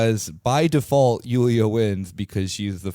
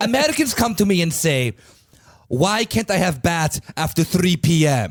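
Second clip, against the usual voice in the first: put-on Italian man's accent, pitched up; 7 semitones higher than usual. Joking in the role of an Italian complaining about Americans: put-on Italian voice. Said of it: "your Italian voice".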